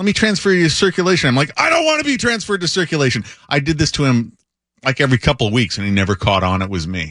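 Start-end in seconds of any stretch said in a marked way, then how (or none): 1.6-3.2 mock very high, angry ranting complaining voice. Prank-calling another employee while pretending to be a subscriber, mock-angry. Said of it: "pretend I was an angry subscriber".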